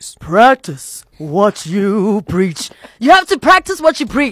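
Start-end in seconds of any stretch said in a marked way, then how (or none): 0.2-2.7 very slow, drawn-out delivery, savoring every word. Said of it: "you have to say it in his voice".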